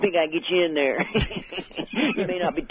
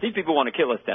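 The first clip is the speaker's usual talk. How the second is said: quick, rattled-off speech, tongue pressed up top; 3 semitones lower than usual. Working on an impression of a man who talks very fast: fast-talking impression. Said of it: "his tongue is sort of up at the top of his mouth, and he talks very fast".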